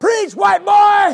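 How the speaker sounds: high, loud shout. Preacher recalling a young man standing up and yelling at him, retelling a yell. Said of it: "he yelled out".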